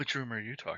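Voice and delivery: very quiet, hushed voice. Voicing a woman who asks a player about a rumor: hushed tone. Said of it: "in a hushed tone".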